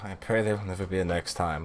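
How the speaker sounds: said quietly under breath. Answering the librarian in character: muttered under breath. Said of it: "I say under my breath".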